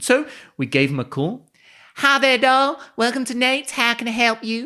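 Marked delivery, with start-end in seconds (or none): 2.0-4.7 put-on full, very high Southern Texan accent. Retelling a phone call to a texan diner, voicing the woman who answered in a southern texan accent. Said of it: "Like fully Texan, Southern kind of voice".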